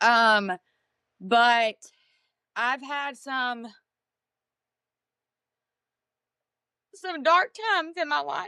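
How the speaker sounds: tearful voice, close to crying, holding back tears. Answering why they do what they do: tearful, close to crying. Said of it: "Said I was not gonna cry".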